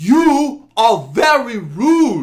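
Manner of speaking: acted very high, shrill, flustered, offended, taken-aback voice. Retelling a quarrel over a seat, quoting an older man's reply; imitating a taken-aback man. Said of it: "he was so taken back".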